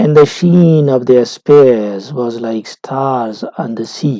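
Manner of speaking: strong beats land on sheen, spears, stars, sea. Reading a verse line aloud to show its stresses, stress on sheen, spears, stars, sea. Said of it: "we read it like this".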